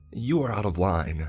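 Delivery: savage, vicious snarling voice. A woman rebukes a man for his remarks about the house, snarling viciously. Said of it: "she snarled viciously".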